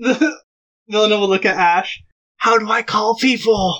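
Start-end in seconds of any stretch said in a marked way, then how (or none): 2.4-3.8 quiet hushed whisper. Asking so the doctor doesn't hear, whispering. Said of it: "she whispers it so the doctor doesn't hear".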